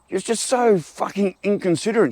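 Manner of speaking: mock shouting, exasperated, pitched way up. Retelling finally yelling at the neighbour about her dog: imitating own yell. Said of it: "I just finally yelled out".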